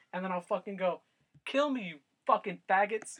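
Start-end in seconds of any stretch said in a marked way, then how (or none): 1.4-3.1 acted screaming, higher and louder. Retelling taunting ghosts at night: retelling own screaming. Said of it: "And I'll scream".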